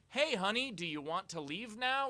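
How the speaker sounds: loud, pointed call. Retelling leaning over to a woman a guy was pulling away, retelling a loud call. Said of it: "Like really loudly".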